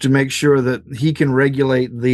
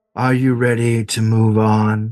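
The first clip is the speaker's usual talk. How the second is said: slow, deliberate, measured voice; 3 semitones lower than usual. Voicing a hooded figure who beckons a player closer: voicing the hooded figure. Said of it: "He thumbs over his shoulder".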